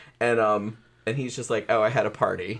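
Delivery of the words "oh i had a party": mock bone-dry, flat deadpan delivery. Retelling the ending of a movie about chasing a rat: imitating a deadpan delivery. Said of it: "so deadpan".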